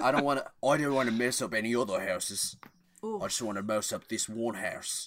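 put-on Australian accent. Discussing what he would say, an Australian-accent Deckard Shaw impression. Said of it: "That's Australian. I don't know why I'm doing".

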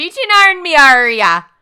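full, very loud, high-pitched put-on Irish accent. Joking with a co-host who mentions another podcast, in an Irish accent. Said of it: "I went totally Irish when I said that".

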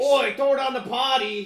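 put-on very high, shrill, loud, booming Australian accent. Imitating Australian listeners reacting to the podcast: mock Australian accent. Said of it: "Be like".

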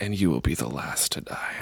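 soft, muttered whisper under the breath. Retelling muttering to a frustrating customer at a video store: imitating own whisper. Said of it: "I would whisper under my breath".

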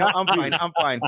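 sulky, grumpy, dismissive tone. Retelling how the wife refused to move to the front: imitating a grumpy refusal. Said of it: "she was being all grumpy".

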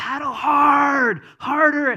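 shrill, booming, full-volume yell, hard drawn out. Recalling a rafting trip, acting out the guide's orders: retelling a guide's yelling. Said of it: "But he's yelling at us".

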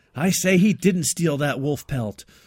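put-on clumsy, loud, booming old-movie courtroom lawyer voice. Joking about Atticus Finch as a frontier lawyer: Gregory Peck impression. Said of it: "I can't do a Gregory Peck impression".

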